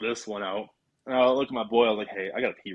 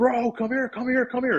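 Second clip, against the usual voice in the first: put-on, shrill, very high screaming; 12 semitones higher than usual. Retelling hearing crunching nearby and calling a buddy over, retelling a scream. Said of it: "I'm screaming for my boy".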